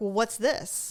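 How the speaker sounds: sassy, pointed tone loaded with attitude. Retelling how the partner asked about the cheese: imitating a question with attitude. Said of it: "And you said it with attitude".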